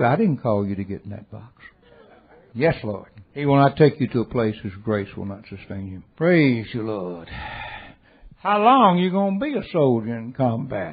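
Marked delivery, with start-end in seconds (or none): 0.1-1.6 put-on very sweet, loving tone. Retelling how the Lord answered a complaint about the box, imitating a sweet reply. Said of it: "he just said very sweetly".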